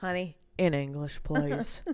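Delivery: put-on sassy, seasoned old police officer voice. Speaker pictures playing a favourite character type; sassy old cop voice. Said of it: "see me as a sassy old cop going".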